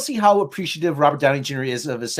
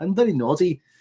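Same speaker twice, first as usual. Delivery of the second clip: put-on cute English accent. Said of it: "I'm sounding like, more like, uh, [name] now".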